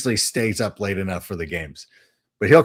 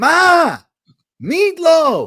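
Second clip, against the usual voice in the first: put-on very high, loud, swooping yelling-kid holler; 6 dB louder than usual. Describing people who scream instead of asking, mock screaming like Will Ferrell. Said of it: "and the screaming".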